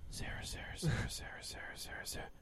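eerie, creepy whisper repeated over and over. Retelling repeating a babysitter's name to remember it, in a creepy whisper. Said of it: "Just creepily whispering her name".

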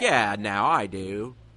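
put-on bad American accent. Imagining a player acting in a movie: Kevin Love in a bad American accent. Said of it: "a really bad American accent".

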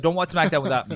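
ordinary talk

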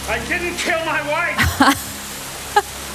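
very high-pitched movie leading-man voice. Answering a request for an impression: Harrison Ford impression. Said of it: "your best Harrison Ford impression".

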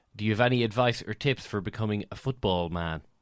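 ordinary talk, nothing marked

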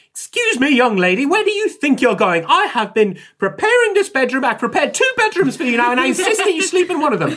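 shrill, high, booming, swooping scolding tone. Voicing the nurse who catches a player sneaking away: Nurse Ackland voice. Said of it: "Nurse Ackland does see you. And she turns around and she says".

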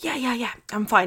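imitated speaking through tears. Telling how she answered her history teacher: retelling words through tears. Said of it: "like through my tears".

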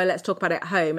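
ordinary delivery

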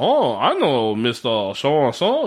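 drawn-out, slow, terrible put-on French accent. Retelling what a tiny man in a beret said: imitating a french accent. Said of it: "talking in this French accent".

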